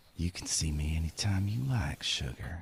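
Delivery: close, soft, flirty whisper. Playing a character leaning close to another's cheek: whispering. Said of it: "and I'll whisper".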